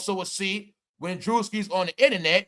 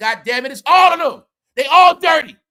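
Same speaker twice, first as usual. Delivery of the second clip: all-out, very loud, high-pitched scream; 8 semitones higher, 9 dB louder than usual. Repeating an earlier statement for the viewers: screaming own earlier words. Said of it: "So I scream like that".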